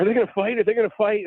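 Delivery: play-acted very high, thrilled child's voice, rapid excited chatter. Retelling the eldest daughter asking about the fight: imitating excited daughter. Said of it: "she was really excited".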